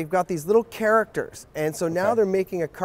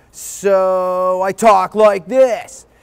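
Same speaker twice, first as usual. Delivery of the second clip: put-on very loud bratty kid voice, "so" stretched out; 8 dB louder than usual. Showing his audition voice for a bratty cartoon kid: bratty Trevor Troublemeyer voice. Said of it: "he's a bratty 12-year-old".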